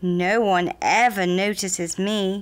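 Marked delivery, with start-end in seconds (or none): none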